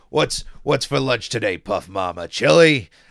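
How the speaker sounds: very loud, big, butch, masculine woman's bellow. Describing a jail scene from a show, the speaker does a masculine Donna impression. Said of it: "That's my best Donna impression".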